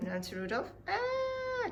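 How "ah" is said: sudden high scream. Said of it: "Why are you screaming?".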